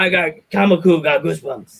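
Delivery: imitated puppet monster voice. Retelling what a big wrestler said, in a Cookie Monster voice. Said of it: "In his Cookie Monster voice".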